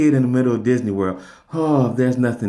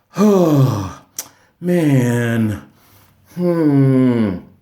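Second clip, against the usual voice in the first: upset groaning, long drawn-out oh; 4 dB louder than usual. Retelling how a friend's nephew sounded while walking around: imitating an upset nephew. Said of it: "just really upset".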